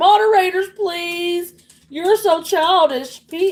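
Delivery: crying, begging, pleading voice. Retelling how Grayson begged moderators in chat: imitating Grayson crying for moderators. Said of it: "Grayson's in there crying for moderators".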